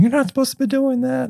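very high-pitched, loud, scolding screaming. Retelling great-grandmother catching him at the freezer: imitating great-grandmother screaming. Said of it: "screaming at him".

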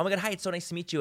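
high, bubbly, exuberant, gushing and energetic. Showing how fans get greeted on meeting: imitating own exuberant bubbly greeting. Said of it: "I'm really exuberant and bubbly".

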